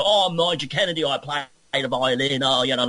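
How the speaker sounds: put-on Cockney accent. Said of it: "he does the same thing there".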